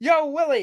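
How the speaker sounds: calling out way up high. Quoting a sitcom alien's line: Alf impression. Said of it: "that's what he says".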